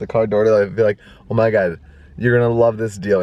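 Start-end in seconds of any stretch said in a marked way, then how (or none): none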